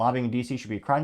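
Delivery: ordinary delivery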